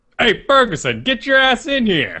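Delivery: angry, high-pitched buddy-cop police chief voice. Addressing the other speaker by his surname, in an angry police chief voice. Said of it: "like an angry police chief from a buddy cop film".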